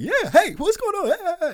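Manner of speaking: very high, rushed, over-excited voice. Wondering if the podcast sounds too excited, imitating own overexcited greeting. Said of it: "if I come off a little too excited".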